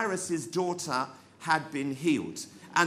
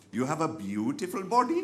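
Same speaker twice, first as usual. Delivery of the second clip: weak, poorly done put-on Indian accent. Quoting what a Sikh soldier said to him, weak attempt at the soldier's accent. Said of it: "I can't do the accent very well".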